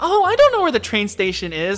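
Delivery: put-on bubbly, cheerful voice. Retelling what a coworker said to a customer: imitating a bubbly coworker. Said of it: "my coworker's trying to be bubbly".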